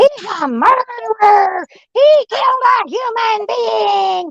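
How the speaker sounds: mock very high, very slow, drawn-out screaming. Retelling what a caller said on the phone: imitating someone screaming. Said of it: "she's screaming out the top of her lungs".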